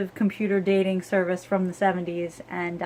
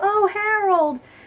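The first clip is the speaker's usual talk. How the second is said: play-acted, high-pitched, shrill scream of horror; 13 semitones higher, 5 dB louder than usual. Recounting a show scene as a woman reacts to Harold, retelling a horrified scream. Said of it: "she stands up out of her seat and she's screaming".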